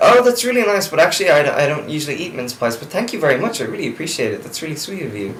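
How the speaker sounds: high, sweet, gushing, overly polite tone.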